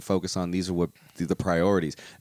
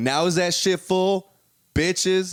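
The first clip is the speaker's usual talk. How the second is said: very high-pitched, aggressive, jeering tone; 11 semitones higher, 3 dB louder than usual. Speaker retells a man filling something with sand and quizzing listeners, imitating an aggressive man. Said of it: "I don't know why I'm making him aggressive".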